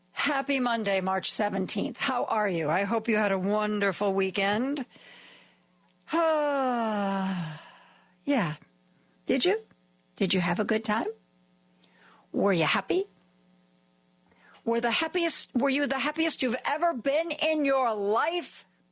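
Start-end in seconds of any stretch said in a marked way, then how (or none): 10.1-18.6 building, escalating delivery with rising, climbing pitch. Greeting listeners at the start of the show, raising voice, getting loud. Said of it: "I'm starting to raise my voice".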